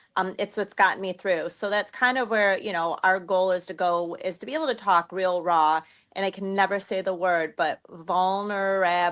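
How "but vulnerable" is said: 'vulnerable' spoken very slowly, drawn out. Explaining their goal to talk raw, saying 'vulnerable' very slowly. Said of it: "I have to say it very slowly".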